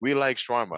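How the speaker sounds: put-on Nigerian man's voice and accent, high. Imitating a viral audio of a nigerian man: put-on nigerian accent. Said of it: "it's a Nigerian, yeah, he goes".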